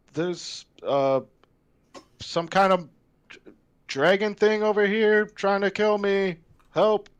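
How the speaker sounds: very high, unconvinced, half-hearted cry. Playing a character asking for help, sounding unconvinced. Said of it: "She doesn't sound very convinced".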